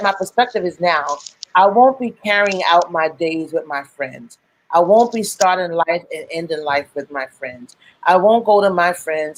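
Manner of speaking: normal talking voice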